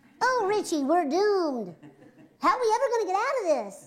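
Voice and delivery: very high, squeaky, swooping helium cartoon voice. Recalling a voice role, showing how the character sounded, Gloria voice. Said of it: "sounded like Bart too on Helium".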